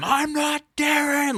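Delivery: put-on wild screaming. Retelling how a movie villain freaks out: imitating someone screaming. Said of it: "freaks out and screams at him".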